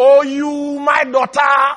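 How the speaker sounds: loud, drawn-out, anguished cry. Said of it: "God is up there saying".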